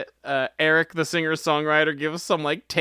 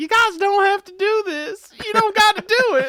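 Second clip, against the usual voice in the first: very high, loud, hammed-up campy pleading; 5 dB louder than usual. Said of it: "he was like".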